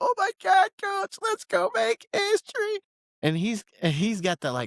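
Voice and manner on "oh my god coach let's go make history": put-on, very high, cliché, overexcited movie cheer. Retelling a drafted player's reply to a coach's call: imitating Ty Simpson's movie-cliche excitement. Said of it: "trying to do, like, the movie cliche of".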